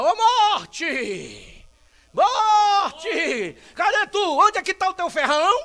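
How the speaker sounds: booming, very loud, very slow, drawn-out shout. Retelling how Paul calls out to Death, acting out Paul's shout. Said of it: "E ele grita".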